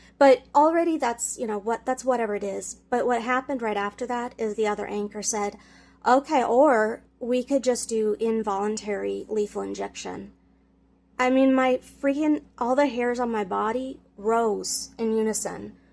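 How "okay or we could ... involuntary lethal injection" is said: ordinary talk, nothing marked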